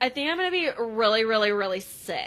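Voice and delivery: plain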